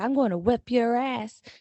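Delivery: loud, high, weird put-on country accent, taunting. Retelling two young kids trash-talking each other: imitating kids' weird country accent. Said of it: "some weird country accent".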